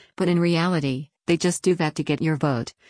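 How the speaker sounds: plain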